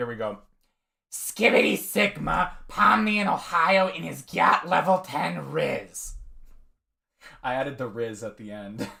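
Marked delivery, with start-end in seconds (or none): 1.1-6.1 slow, drawn-out, rough, creaky character voice. Performing a requested line in a put-on voice: Smoker Toad voice. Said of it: "There's your Smoker Toad impressions".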